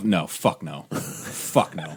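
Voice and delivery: seething, slow, breathy furious whisper, very drawn-out. Told to put her on a shelf, the speaker refuses: angry. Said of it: "Why are you so angry?".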